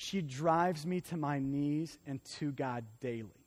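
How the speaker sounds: play-acted, tearful, weeping delivery. Retelling a pastor's reply to an apology, imitating someone speaking through tears. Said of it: "And through tears, he says".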